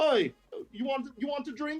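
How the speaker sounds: failed put-on Jamaican accent, pitched very high. Speaker acting out someone offering drinks on the house, in a botched put-on accent. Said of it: "That was almost Jamaican".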